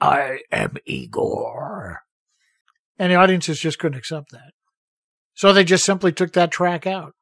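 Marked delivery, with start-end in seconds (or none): 0.0-2.0 whispered, breathy voice, breathed out. Explaining a dubbed movie ending, the speaker quotes the line in an Igor voice. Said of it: "Bela used his Igor voice".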